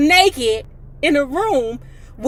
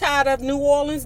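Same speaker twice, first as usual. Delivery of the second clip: plain reading voice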